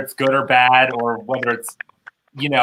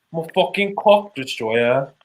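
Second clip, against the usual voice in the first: put-on British accent. Taking a turn at impressions with the group, the speaker does a Sophie Anderson impression. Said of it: "you've got to do a British accent".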